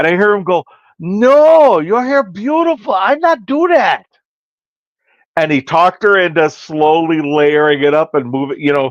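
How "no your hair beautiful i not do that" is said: put-on slow, high Korean-accented broken English, drawn-out no. Retelling what a man said to a woman, in a Korean accent. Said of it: "he's got that Korean accent".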